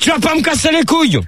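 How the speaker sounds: angry shout.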